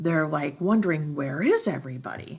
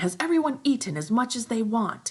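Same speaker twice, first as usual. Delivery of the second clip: high, loud, play-acted shouting; 7 semitones higher than usual. Retelling a story character's demand to the group: imitating someone yelling. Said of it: "he starts yelling at everyone".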